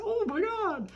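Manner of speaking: squeaky, very high-pitched excited voice. Mocking how Tucker Carlson's voice rises when he gets wound up, squeaky Tucker Carlson voice. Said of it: "their voice goes up like this".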